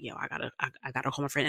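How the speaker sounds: put-on crying in panic. Speaker retelling a panic attack at the airport, retelling panicked crying. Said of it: "I'm sitting in the airport crying".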